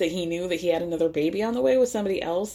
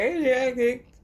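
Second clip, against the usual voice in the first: put-on tipsy voice, higher pitch; 5 semitones higher than usual. Imitating a reality star a few margaritas in: imitating tipsy Dorinda. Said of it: "three and a half margaritas in".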